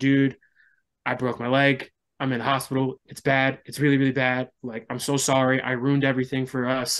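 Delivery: put-on tearful, crying voice. Retelling a phone call from the hospital: retelling own tearful words. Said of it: "And I'm just in tears".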